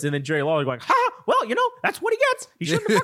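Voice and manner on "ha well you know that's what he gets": very high, swooping, bouncy cartoon squeak. Acting out Jerry Lawler's reply to Jim Ross, unexpectedly in a Mickey Mouse voice. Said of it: "I'm doing Mickey Mouse for Jerry Lawler".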